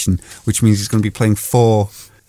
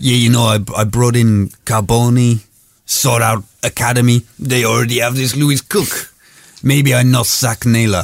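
put-on French accent. Speaker quotes what he said about bringing in players, in a fake French accent. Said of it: "Why have you turned French again?".

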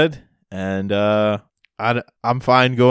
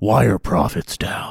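put-on gravel voice. Describing how Batman could have sounded in meetings, doing a gravelly Bruce Wayne voice. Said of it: "go full gravel, like Bruce Wayne in the meetings".

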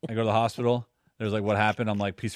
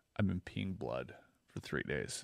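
dead-serious tone, lower and quieter; 6 semitones lower, 13 dB quieter than usual. Retelling looking someone dead in the eyes to give an excuse: imitating own very serious tone. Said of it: "very serious".

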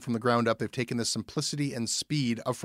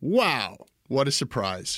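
slow, sarcastic drawl with feigned astonishment. Remarking that the other speaker came on the show to promote a podcast: sarcastic. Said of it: "you being sarcastic?".

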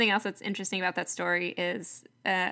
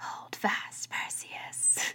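soft, gentle, beautiful whispery hush. Retelling a story, voicing what she says to a character, in a beautiful whispery voice. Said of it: "she says in this beautiful whispery voice".

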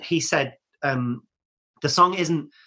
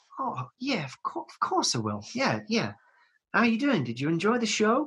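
mild, gentle, soft-spoken, high voice; 7 semitones higher, 5 dB quieter than usual. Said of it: "this soft, gentle man".

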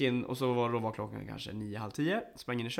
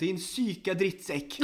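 put-on anger, much higher; 7 semitones higher, 3 dB louder than usual. Retelling what a man said before he walked off, retelling an angry insult. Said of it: "alltså han var jättearg".

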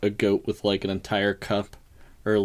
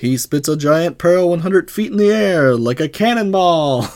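put-on showman announcer voice; 9 semitones higher, 11 dB louder than usual. Retelling a scene, the speaker gives the character's announcer voice. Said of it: "his announcer voice on".

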